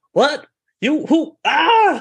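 very high, slow, drawn-out, stunned startled yelp. Voicing a guard surprised and tackled in the dark: startled guard getting tackled. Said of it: "He's like".

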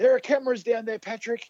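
mock, very high, yelled shout. Retelling someone yelling at a golfer at the bunker, retelling a yell from the crowd. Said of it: "someone's yelled out".

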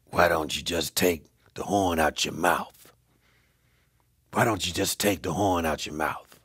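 very low, deep, gravelly voice. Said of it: "said in his gravelly voice".

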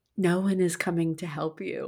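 hushed whisper. Reading aloud a post quoting a three-year-old daughter: whispering. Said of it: "whispered to me".

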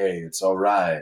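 smooth light FM jazz radio DJ voice. Describing how they stay numb, a speaker demonstrates a smooth jazz light FM tone. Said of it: "in a very jazz light FM tone".

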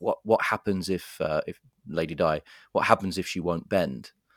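ordinary delivery

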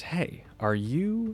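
very slow, drawn-out, high-pitched. Retelling a stranger approaching him in a coffee shop, saying it very slowly. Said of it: "says this very slowly".

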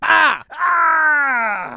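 high, loud, pained scream.

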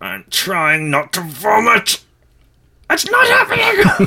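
very high voice through clenched teeth. Acting out someone's reaction to a newly announced Brexit plan, imitating speech through gritted teeth. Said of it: "through gritted teeth".

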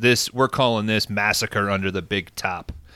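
ordinary delivery

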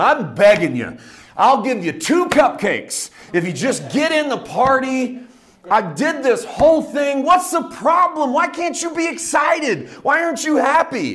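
slow, high begging voice. Retelling a father begging his angry son to join the party: imitating a pleading father. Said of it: "dad comes out and pleads with him".

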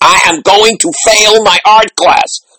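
acted, high, rising, top-of-the-lungs scream. Retelling a student's daily greeting to the class: imitating a student screaming. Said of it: "come in screaming at the top of her lungs".

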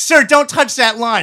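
loud scolding yell. Retelling how a worker yelled at the speaker to stop: imitating a worker yelling. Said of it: "and yells at me".

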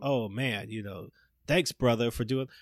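mock flat, flavorless "brother". Imitating how characters in a movie thank someone: imitating a flat, flavorless "brother". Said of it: "not even just flavorless".

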